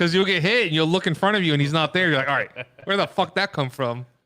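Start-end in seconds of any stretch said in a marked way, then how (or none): 2.3-4.1 casual, put-on Irish brogue. Describing getting hit while fighting him, in an irish accent. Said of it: "Why'd you have like an Irish accent there?".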